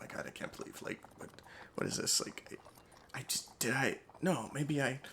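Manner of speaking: breathy, whispered mumble under the breath. Narrating a game, voicing a knight who passes the players: muttering to himself. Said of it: "he's like muttering to himself".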